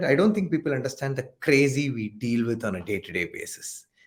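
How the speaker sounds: ordinary talk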